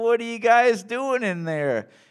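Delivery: sweet, high, cutesy little voice. Retelling what someone asked on finding three people in one stall: cute voice. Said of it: "they had like this cute voice".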